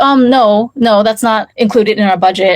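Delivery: ordinary delivery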